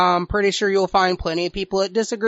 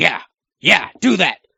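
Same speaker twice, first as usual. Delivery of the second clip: low, rough-edged, pressing voice; 4 semitones lower than usual. Imitating the promoter sitting in the back: imitating Vince McMahon screaming. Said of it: "you know he's screaming that".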